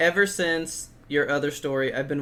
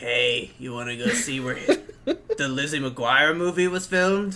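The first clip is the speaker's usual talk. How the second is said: rough, sick-sounding, raspy, hoarse voice. Picturing the other speaker on their honeymoon, imitating them: raspy voice. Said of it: "picture you with this like raspy voice".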